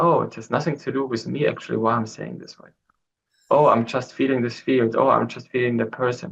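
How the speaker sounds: usual speaking voice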